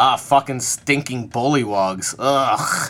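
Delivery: slow, deliberate, loud, drawn-out put-on delivery. Telling a game scene, the speaker voices a character rounding a corner, said real loudly. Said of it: "he says real loudly".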